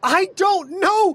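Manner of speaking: frightened, bewildered, panicked, very high voice. Voicing a character who just reunited, panicked and afraid. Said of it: "you can see there is panic, there's fear".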